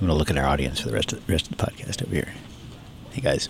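whispering low and grumbly. Podcast host turns to address the audience; low grumbly whisper. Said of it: "whisper in that low, grumbly voice".

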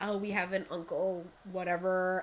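ordinary delivery

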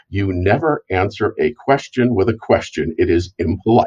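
ordinary talk

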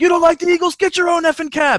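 shrieking, very high, shrill, high-pitched yell. Retelling a story, the speaker acts out a cab driver screaming at his passenger. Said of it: "started screaming at him".

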